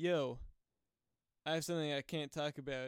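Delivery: ordinary delivery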